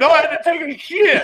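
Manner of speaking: very high, shrill, full-volume, blunt voice. Retelling an answer to a nurse's question: imitating saying it real loud. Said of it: "I said it real loud".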